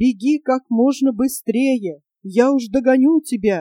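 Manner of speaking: plain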